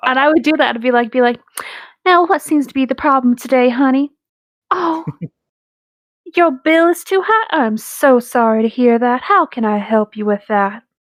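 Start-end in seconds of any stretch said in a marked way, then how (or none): 2.0-10.8 put-on mild, gentle, slow Georgia Southern accent. Recalling how they'd mess with people: soft Southern accent. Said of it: "Just do a soft Southern accent like Georgia".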